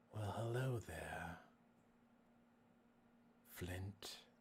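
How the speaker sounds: eerie, unsettling, low, soft, creepy voice. Greeting flint, who sits dead in line with him, in a creepy voice. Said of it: "you creepy voice".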